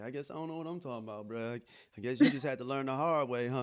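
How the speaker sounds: mock petty, dry, sarcastic tone. Acting out what one would say to someone who had to learn the hard way: imitating own sarcastic reply. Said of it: "I'm sarcastic, like".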